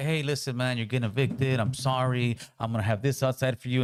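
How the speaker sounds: slick, smooth, soothing, even smooth-talking delivery. Imitating Obama as a smooth talker evicting someone: smooth-talking Obama impression. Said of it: "Obama was just such a smooth talker".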